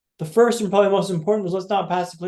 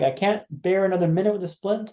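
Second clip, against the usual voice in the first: normal talking voice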